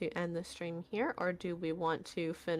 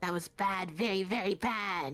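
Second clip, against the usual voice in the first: words cackled out gleefully. A storyteller voices an unseen speaker; cackling voice. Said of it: "sort of uh cackling voice say".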